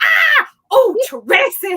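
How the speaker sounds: mock sudden, loud, high startled shriek of fright. Imitating an older lady at work who gets scared every time: imitating a startled shriek. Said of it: "every time she gets scared, she goes".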